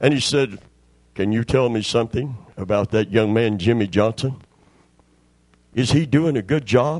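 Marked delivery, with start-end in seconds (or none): 1.2-7.0 put-on disguised voice, much lower pitch. Retelling a man phoning his own boss in disguise: low disguised voice. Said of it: "He spoke real low, tried to disguise his voice".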